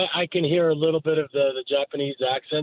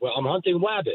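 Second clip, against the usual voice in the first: r said as w in wabbit; 2 semitones higher than usual. Commenting on an announcer's audio clip, doing an Elmer Fudd voice. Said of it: "like Elmer Fudd".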